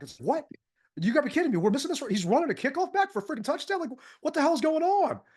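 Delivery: mock worked-up, excited screaming and hollering. Speaker recounts hearing a kickoff return touchdown on the radio, retelling excited yelling. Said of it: "I'm yelling and screaming".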